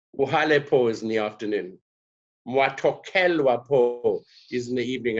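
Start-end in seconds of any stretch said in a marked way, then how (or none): none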